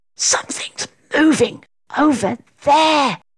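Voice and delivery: high, hissing voice. Reading fiction aloud, the narrator voices a girl hissing to her companion. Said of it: "hissed Katie".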